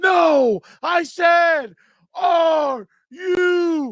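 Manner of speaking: put-on angry wrestler voice. Doing a promo on the spot, quoting Triple H: angry Triple H impression. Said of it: "Like Triple H says".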